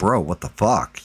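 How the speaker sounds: put-on muttering out of the side of the mouth. Retelling what a buddy said at the bar: imitating Bones side-mouthing. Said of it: "side-mouthing it".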